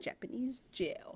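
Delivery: breathy, playful whisper with a little flair. Repeating back the other speaker's line, imitating the funny way they said it. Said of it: "the funny way you said it".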